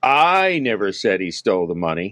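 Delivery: I stressed hard and lifted in pitch.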